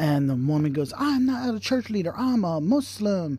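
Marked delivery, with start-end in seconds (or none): 1.0-3.4 mock yelling, very slow, high and drawn-out. Retelling what the woman said when church leaders showed up, retelling a woman yelling. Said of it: "and starts yelling".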